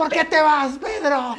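put-on shout. Retelling how a guy on a club balcony called after him: imitating someone shouting. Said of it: "Y me grita".

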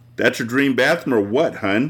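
ordinary delivery

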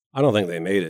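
plain

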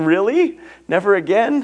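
put-on high, tearful little-girl voice, crying out. Retelling the five-year-old daughter coming into the room, imitating her crying. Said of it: "came into the room crying".

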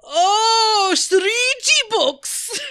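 shrill, very loud, drawn-out aha. Retelling a rehearsal where a composer finally understood the word: impression of James saying "shruti box". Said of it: "that impression is not really of James".

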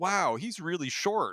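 mock very high, drawn-out exclaim at full blast. Retelling a remark made beside a booth: imitating saying it very loudly. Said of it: "as loud as I could possibly say".

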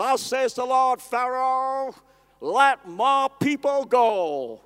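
put-on slow, drawling Texan accent, "go" stretched out. Retelling a movie Moses speaking to Pharaoh: Charlton Heston drawling Texan accent. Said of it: "drawls out the Texan accent".

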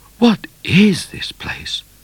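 hushed, nervous, breathy near-whisper. Narrator reads Midnight's question in the story: nervous voice. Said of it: "Asked Midnight in a nervous voice".

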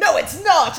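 mock outburst, loud and high, blurted.

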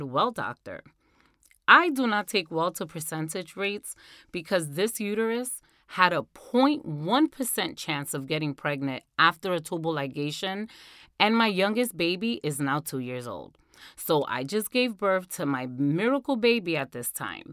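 normal talking voice

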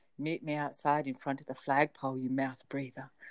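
very low, flat phone-line voice. Reading aloud a quoted message to the co-host, in a low 1-900 number voice. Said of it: "I feel like I should lower my voice for this".

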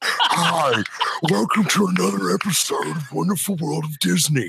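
rough, rasping TV presenter delivery. Imitating Michael Eisner introducing Wonderful World of Disney: raspy Michael Eisner voice. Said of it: "with his raspy voice be like".

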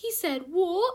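loud, high put-on British accent. Acting a scene, complaining that a man was out of line, in a british accent. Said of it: "I want to be in a British accent".

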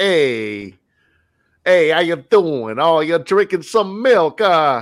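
put-on 1920s old-time mobster gangster patter. Mimicking the main band geek kid character, in a 1920s gangster voice. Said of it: "you sounded like a 1920s gangster".

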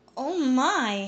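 anxious, worried little exclamation. A woman reacts to the narrator's news from a letter, with a worried exclamation. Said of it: "she exclaimed, her face full of worry".

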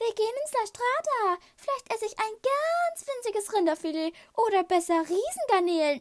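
affected, very high, mannered put-on voice. Narrator reading Millie mimicking Ariane after she drives off, mocking Ariane's affected speech. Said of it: "äffte Arianes gezierte Sprechweise nach".

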